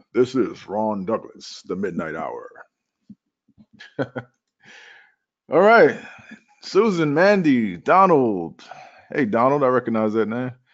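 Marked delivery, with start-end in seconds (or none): 0.1-2.5 very low, hushed late-night radio host voice. Greeting people who type into the questions box, in a radio voice. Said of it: "Brought out my radio voice".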